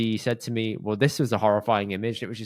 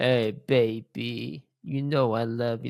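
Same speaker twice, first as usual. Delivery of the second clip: very slow, croaky, drawn-out voice. Joking with a co-host about Phoebe's sore throat, doing the croaky Phoebe voice. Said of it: "like proper croaky voice".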